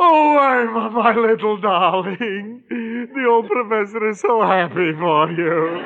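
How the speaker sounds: high, tearful, crying speech, talking through tears. An old professor tells Irma he is happy for her, crying while talking. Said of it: "I haven't cried like this".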